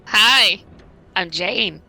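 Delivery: hot husky voice. Introducing yourself to the listeners as a guest player: husky voice. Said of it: "I'm not that hot and husky".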